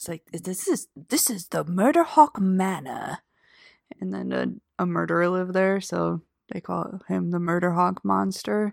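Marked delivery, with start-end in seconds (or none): 0.3-3.2 put-on old-fashioned film-style delivery. Describing a spooky mansion like an old-timey movie: old-timey movie voice. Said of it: "a old-timey movie where your house has a name".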